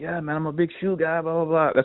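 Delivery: put-on amateur Australian accent. Recounting a kid who talked shoes with him, he quotes him, Australian accent impression. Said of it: "That's your Australian accent?".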